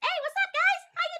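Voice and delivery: put-on tiny young boy voice, very high. Showing co-hosts a voice still in the works, a little tiny boy voice. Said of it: "have in the works a little tiny boy voice".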